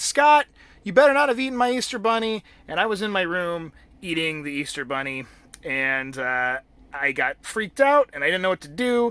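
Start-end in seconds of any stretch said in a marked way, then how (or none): 0.0-2.4 loud, high-pitched yelling. Retelling how mom yelled from the kitchen: imitating mom yelling. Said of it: "She was yelling".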